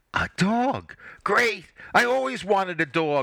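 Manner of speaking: very high, eager, excited burst. Hearing the plan announced, she exclaims. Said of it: "Holly exclaimed".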